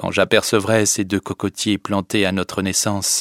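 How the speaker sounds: plain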